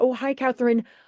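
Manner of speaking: voice audibly smiling. Showing how they quickly greet Catherine, in a smiling voice. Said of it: "I try to get it in with a smiling voice".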